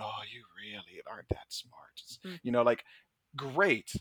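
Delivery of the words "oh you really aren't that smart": hushed, very quiet, wheezing delivery. Recalling a favorite film scene and quoting a character's line, in a wheezy tone. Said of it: "with that kind of wheezy tone".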